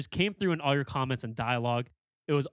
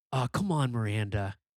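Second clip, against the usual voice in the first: coaxing, urging tone in a put-on character voice; 2 semitones lower than usual. Doing a Sex and the City joke with Tara in a Steve voice. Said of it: "Like in a Steve voice".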